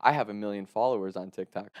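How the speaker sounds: normal talking voice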